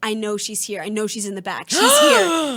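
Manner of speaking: put-on pushy, creepy, insistent sing-song voice. Retelling how a rejected date insisted she was at work: imitating a creepy insistent man. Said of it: "he's being that creepy".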